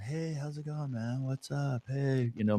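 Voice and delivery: very soft, hushed, gentle, laid-back dude voice. Describing an old acquaintance on first meeting, imitating a calm, relaxed guy. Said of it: "the most gentle, calm, relaxed person".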